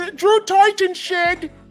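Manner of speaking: put-on British accent. The speaker repeats a phrase the way he hears it, in a put-on british accent. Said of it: "I hear it in a British voice".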